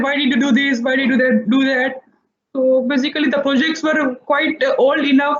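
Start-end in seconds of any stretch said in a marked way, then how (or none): none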